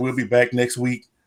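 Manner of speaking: ordinary delivery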